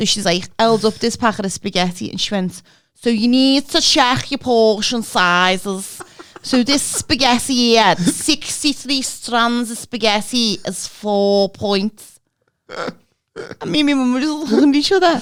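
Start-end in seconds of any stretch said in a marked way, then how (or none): 3.0-12.2 put-on broad, very thick, slow Scouse accent laid on thick. Retelling what a meeting leader said: imitating a very strong Scouse accent. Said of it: "she was so Scouse, she sounded Welsh".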